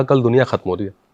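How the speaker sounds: plain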